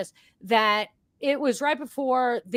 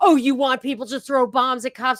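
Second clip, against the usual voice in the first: heated, angry yelling; 3 semitones higher, 5 dB louder than usual. Retelling what people on the right say to them: imitating someone yelling. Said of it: "people on the right who are yelling at me like".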